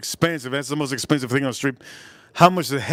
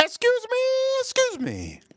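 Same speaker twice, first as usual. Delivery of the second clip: very high, swooping put-on voice, like a woman's. Showing how to call out when you need to say something: high-pitched voice. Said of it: "put the high pitched voice".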